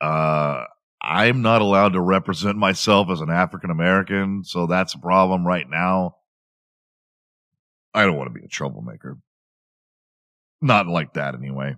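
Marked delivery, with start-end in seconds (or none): none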